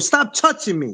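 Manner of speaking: mock angry, fed-up, combative tone. Acting out getting mad when people grab you: acting out getting mad. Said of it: "you get mad and people grab you, you go".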